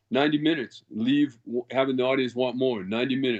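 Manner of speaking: usual speaking voice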